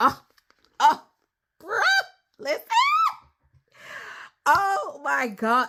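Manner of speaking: gushing, thrilled, very excited voice. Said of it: "Sorry, I just get so excited".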